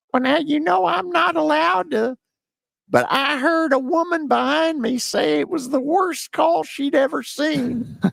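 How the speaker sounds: squeaky, very high-pitched coach voice. Retell his answer when asked about the call in the post game, imitating a squeaky voice. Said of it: "in that squeaky voice, he goes".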